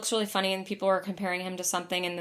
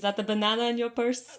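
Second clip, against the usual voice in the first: clumsy, bad fake Russian accent; 4 semitones higher than usual. Quoting a character from a favorite episode, in a bad Russian accent. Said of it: "back the Russian".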